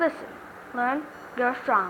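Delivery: feeble, fading voice. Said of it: "Why do you sound like you're gonna die".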